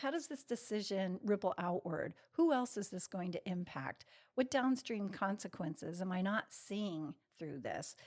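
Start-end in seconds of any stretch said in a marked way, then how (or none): none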